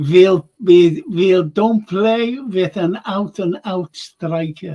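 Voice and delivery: slow, plodding, clumsy bad German accent. Reading out a question from Red Juice, quote what Klopp said in a terrible Jürgen Klopp impression. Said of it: "that was a terrible Jurgen impression".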